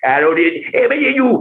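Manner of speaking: very high-pitched comic voice. Retelling an interview where producers asked for impressions, Adam Sandler impression. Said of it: "What would Adam Sandler say?".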